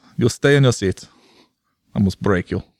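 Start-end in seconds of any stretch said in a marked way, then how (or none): 0.2-1.1 put-on German accent. Imitating an airline crew refusing to move seats: put-on german accent. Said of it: "I don't have good, like, delineation between my accents".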